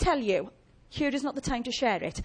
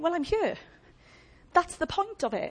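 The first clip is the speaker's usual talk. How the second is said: heavy sarcasm with impatience, pitched up; 5 semitones higher than usual. Acting out the answer given to people who pray, mock-sarcastic and impatient. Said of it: "a little less sarcastically and impatiently than I'm saying it".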